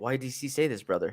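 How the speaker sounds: angry, pissed-off, confrontational demanding tone. Retelling a fighter's reaction to d c: imitating someone pissed off. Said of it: "all pissed off after that".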